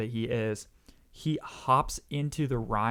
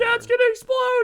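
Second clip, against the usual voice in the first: put-on, very high, loud, frantic panicked shriek; 9 dB louder than usual. Retelling how a sister reacted to a field fire: imitating someone freaking out. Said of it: "she was freaking out".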